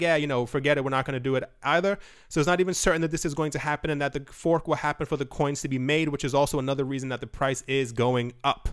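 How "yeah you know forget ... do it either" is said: plain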